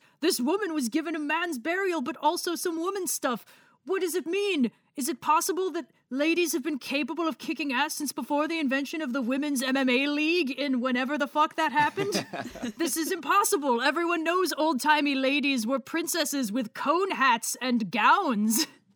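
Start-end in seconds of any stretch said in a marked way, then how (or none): 3.8-18.7 prim, superior, snooty, uptight academic voice. Discussing a woman given a man's burial, the speaker does a snooty, uptight archaeologist impression. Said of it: "I love your impression of snooty, uptight archaeologists".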